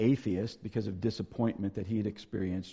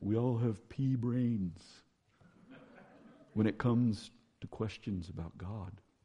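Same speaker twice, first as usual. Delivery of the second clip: put-on slow, thick Dutch accent. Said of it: "in his great Dutch accent".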